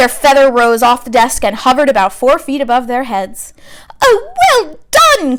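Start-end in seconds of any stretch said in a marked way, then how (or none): 4.0-5.4 very high, ringing cry of approval. Reading the story aloud, Professor Flitwick reacts to a student's spell, crying out. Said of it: "cried Professor Flitwick".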